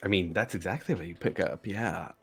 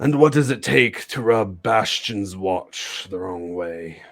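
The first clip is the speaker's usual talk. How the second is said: put-on thick, drunken voice, louder; 3 dB louder than usual. A storyteller voices a man who has been drinking, questioning the players; thick, drunken voice. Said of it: "in a very kind of just thick voice".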